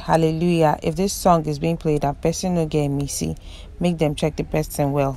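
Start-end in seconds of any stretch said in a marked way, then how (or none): none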